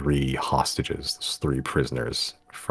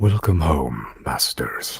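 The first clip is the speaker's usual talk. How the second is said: big, booming, comfortable and familiar-sounding voice; 4 dB louder than usual. Narrator voicing a voice heard throughout the manor, in a deep booming voice. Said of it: "deep, booming voice throughout the uh, manor".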